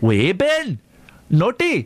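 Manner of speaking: put-on Geordie accent. Recalling a Geordie person known in childhood, doing a Geordie accent. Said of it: "That's my Geordie accent".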